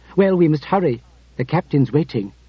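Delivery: ordinary delivery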